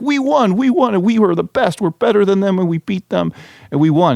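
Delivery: mock thrilled, excited gushing outburst, pitched very high. Retelling a player's post-game interview after a win: imitating an excited athlete. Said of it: "he was so excited".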